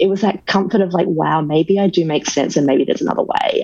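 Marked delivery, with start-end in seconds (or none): none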